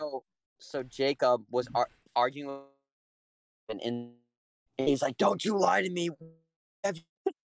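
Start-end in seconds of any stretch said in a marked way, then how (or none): 5.2-7.3 high, loud screaming yell. Retelling what a police officer said while arguing: imitating a screaming cop. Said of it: "cop was, like, screaming".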